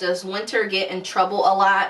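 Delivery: ordinary talk, nothing marked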